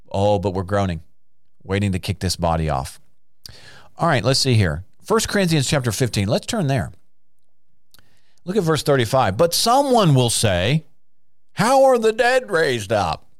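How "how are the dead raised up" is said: very high, scoffing, mocking sarcastic tone. Speaker reading 1 Corinthians voices what someone will say, mock-sarcastic quoted question. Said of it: "they may not be meaning that mockingly or sarcastically, like I just said it".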